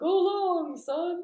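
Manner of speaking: very high, squeaky made-up voice. Trying a Zurg impression in a game of character impressions: Zurg voice. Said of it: "The only Zurg line I know is".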